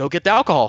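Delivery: play-acted blunt, rude, bossy tone. Retelling what he said while demanding the alcohol: imitating a rude demand. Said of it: "that was so rude".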